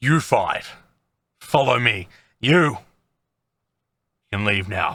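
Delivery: put-on low, heavy, deep old woman's crone voice. Narrator voices a woman speaking to a group of five, in a deep voice. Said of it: "the deep voice. She says".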